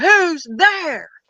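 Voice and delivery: loud, aggressive call. Retelling calling out in the dark woods: retelling a loud aggressive yell. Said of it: "real loud and aggressive".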